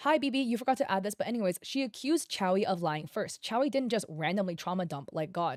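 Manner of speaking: ordinary talk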